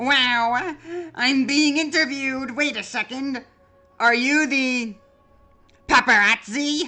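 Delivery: high, eager, thrilled character voice. Voicing Papyrus, who is chosen for a quiz show: Papyrus voice. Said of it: "let me get into voice".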